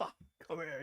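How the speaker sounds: put-on very soft, quiet, half-laughing, chuckling voice. Retelling how Vince called the speaker over: imitating Vince laughing a little. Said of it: "laughing a little bit".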